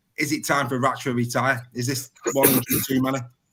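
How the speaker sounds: ordinary talk, nothing marked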